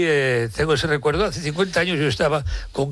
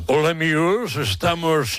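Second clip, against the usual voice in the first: affected radio announcer voice, slower. Mocking how some announcers place their voice, affected announcer voice. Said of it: "cómo coloca la voz".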